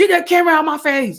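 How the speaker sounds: high, fast crazy outburst. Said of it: "just act up, act crazy".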